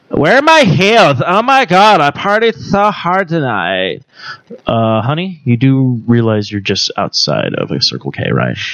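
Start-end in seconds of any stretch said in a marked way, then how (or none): 0.2-4.1 put-on drunk Valley Girl voice, high and swooping. Showing a voice they can do, the speaker plays a drunken valley girl voice. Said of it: "Drunken Valley Girl".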